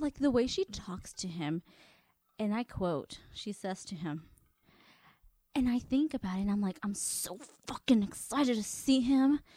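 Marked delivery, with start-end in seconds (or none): 6.8-9.4 mock aggressive voice through clenched teeth. Quoting a contestant who talks to a man: imitating talking through clenched teeth. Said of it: "clenching her teeth when she talks".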